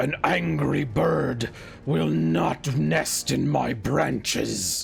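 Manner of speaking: very slow, rough, creaky, hostile tree voice. Voicing a big, angry-looking tree that comes at a bird: voicing an angry-looking tree. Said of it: "it looks down and says".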